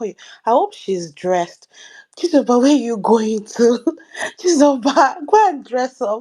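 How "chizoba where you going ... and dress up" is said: mock yelling. Retelling watching a show, imitating shouting at the screen. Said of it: "shouting at my screen".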